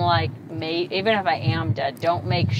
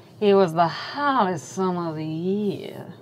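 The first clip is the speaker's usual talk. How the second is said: slow, put-on Southern American accent. Retelling how she started her story: put-on southern accent. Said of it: "I love doing Southern accents".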